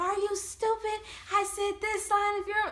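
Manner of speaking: mock furious, very high-pitched angry shouting. Retelling how the instructors scolded scared people: imitating someone yelling angrily. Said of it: "they got yelled at even more".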